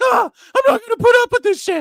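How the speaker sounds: very loud, shrill, high-pitched raging angry yell. Retelling how he yelled at them, retelling an angry yell. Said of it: "He's like yelling at us".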